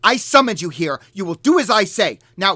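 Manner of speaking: put-on very loud, high, childish, furious temper tantrum. Voicing a giant throwing a tantrum at her summoned giants: furious temper tantrum. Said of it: "she's incredibly pissed off".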